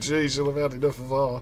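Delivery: ordinary delivery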